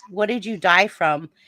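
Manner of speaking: normal talking voice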